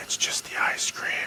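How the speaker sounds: slow, creepy whisper.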